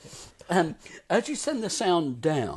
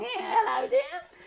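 put-on very high old granny voice. Showing off a vocal technique, the speaker demonstrates: granny voice. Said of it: "check out the granny technique".

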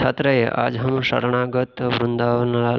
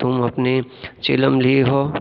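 ordinary talk

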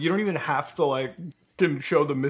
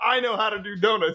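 put-on scream, pitched higher; 5 semitones higher than usual. Retelling a dad reacting to a driving video: imitating dad screaming. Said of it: "he's the one that's screaming".

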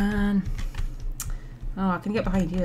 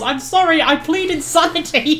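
high yelling voice; 9 semitones higher, 6 dB louder than usual. Recounting a scene where she turns to the man chasing her: retelling a yell. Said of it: "she just yells".

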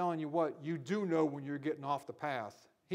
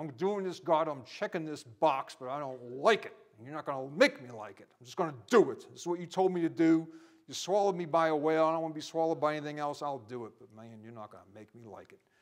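put-on resentful, vehement grumble through gritted teeth; 4 dB louder than usual. A speaker acts out a man's grudging words to God after the whale: acting out vehement grumbling. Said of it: "with a lot of vehemence in his voice".

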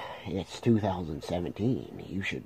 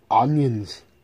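put-on Austrian-accented voice, higher and louder; 7 semitones higher, 13 dB louder than usual. Trying a Shrek voice, it comes out as Arnold Schwarzenegger voice. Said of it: "I meant to do a Shrek voice. That was Arnold Schwarzenegger".

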